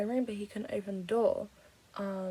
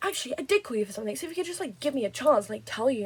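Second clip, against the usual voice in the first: put-on sudden, snappy, irritated, annoyed delivery; 3 semitones higher, 6 dB louder than usual. Speaker retells the landlord's words on a call, retelling a snappy reply. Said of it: "He just snapped at me like out of nowhere".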